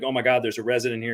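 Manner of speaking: put-on panicking voice. Retelling how an uncle reacted when he couldn't get in a garage: imitating someone panicking. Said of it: "He's panicking".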